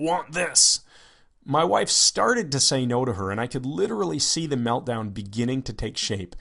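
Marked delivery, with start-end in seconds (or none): 0.0-0.8 put-on high, primitive cave child voice. Retelling how she pointed at them and asked, in her cave child voice. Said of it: "said in her cave child voice".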